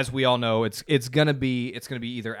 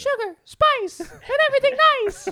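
put-on very high cartoon girl voice; 5 dB louder than usual. Asked to do a Powerpuff Girl, the speaker tries from memory: Powerpuff Girl impression. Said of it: "Can you do a Powerpuff Girl though impersonation?".

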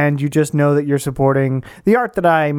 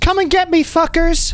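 very high, shrill shout. Character sprinting down a hallway away from guards, yelling. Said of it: "she yells".

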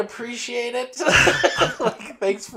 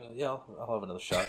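mock flat deadpan, very low and very quiet; 10 semitones lower, 14 dB quieter than usual. Retelling a friend answering an offer of another shot: imitating a friend's emotionless voice. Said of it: "no emotion the whole time".

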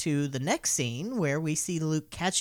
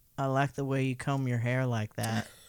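acted-out deadpan delivery, lower; 3 semitones lower than usual. Recounting a remark, the speaker acts it out, retelling a deadpan line.

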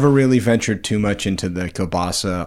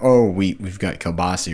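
ordinary delivery

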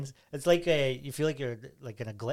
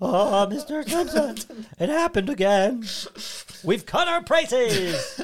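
very high, slow, loud squeaky cartoon kid voice; 9 semitones higher, 7 dB louder than usual. Pitching a betting advert voiced by the spotty kid from The Simpsons. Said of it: "A little spotty kid from The Simpsons".

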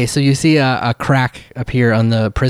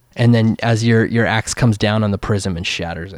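normal talking voice

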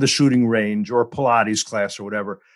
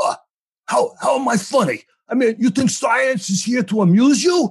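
put-on New York accent with a higher pitch; 13 semitones higher than usual. Imagining a Goodfellas casting, imitating Anthony Fauci: Anthony Fauci impression. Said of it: "you could just cast him the way he is with his accent".

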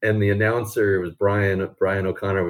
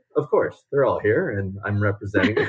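put-on, deadpan child voice. Retelling a young rider's reply to a teasing question: imitating Kendall's straight-faced answer. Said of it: "with the straightest face".

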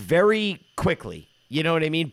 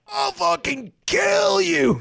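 very high, rasping, drawn-out, enraged furious voice; 3 dB louder than usual. Retelling a driver cutting off the car: imitating dad's furious threat. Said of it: "fucking tweak harder than".

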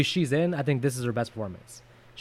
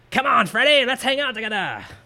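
put-on pitched-up little boy voice with British accent; 9 semitones higher, 3 dB louder than usual. Quoting the child Jacob from Part 5, in a British-sounding kid voice. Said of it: "my kid voice sounds British".

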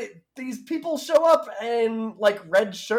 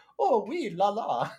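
bad put-on French accent; 4 dB quieter than usual. Mocking how a woman occasionally drops French words, imitating a bad French accent. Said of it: "she just talks like this and then occasionally goes".

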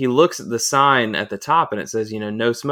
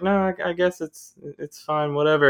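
mock, very nonchalant, offhand voice, pitched high; 5 semitones higher than usual. Retelling how someone answered about cigar smoke in the van: imitating Jacob being nonchalant. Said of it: "very nonchalant".

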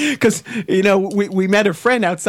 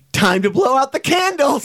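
put-on unfazed little guy voice, much higher; 6 semitones higher than usual. Describing a movie preview where a little guy speaks after a car crash, imitating an unfazed little guy. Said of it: "He's like completely unfazed by this".

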